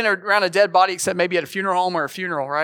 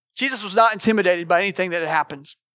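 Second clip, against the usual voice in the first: ordinary delivery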